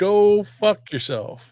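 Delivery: put-on New Jersey accent. Discussing a regional way of saying it, a second speaker repeats the phrase; New Jersey accent. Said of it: "you got to get the accent down".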